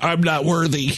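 ordinary delivery

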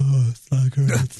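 fake consoling voice, low and slow drawl. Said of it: "how full of crap you are when you're doing".

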